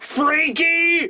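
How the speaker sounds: high, shouted wrestler-style battle cry. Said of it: "and is like".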